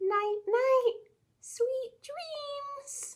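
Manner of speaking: very high bedtime voice, "dreams" stretched out. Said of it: "use a quiet voice".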